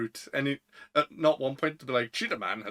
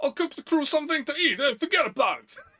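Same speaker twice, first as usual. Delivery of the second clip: put-on shrill, very high, laid-on New York accent; 13 semitones higher, 4 dB louder than usual. Imitating Sanji from the old Fox Kids dub, Sanji's New York accent. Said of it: "Sanji's got the weird New York accent".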